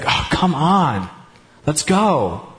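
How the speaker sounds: mock condescending, slow, drawn-out sigh.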